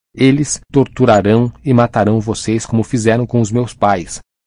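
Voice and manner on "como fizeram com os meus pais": ordinary delivery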